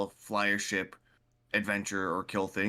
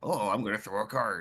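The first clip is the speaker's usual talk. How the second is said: mocking put-on character voice. Retelling how a player fought a golem, mocking Gambit impression. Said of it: "I'm making fun of Gambit".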